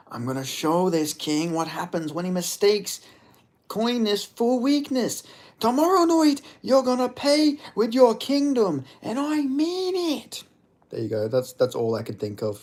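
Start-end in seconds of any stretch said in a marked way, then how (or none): 0.1-10.4 very high put-on voice with mean drawn out. You make up what Connor would say in D and D, as an impression of Connor. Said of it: "Impression of Connor".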